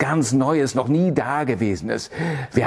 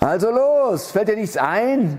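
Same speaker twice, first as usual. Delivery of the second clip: roaring through laughter; 8 semitones higher than usual. Narrator reads the king's line to Hopfrosch, roaring with laughter. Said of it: "Als er ihn demütig aus der Hand des Tyrannen entgegennahm, brüllte lachend der König".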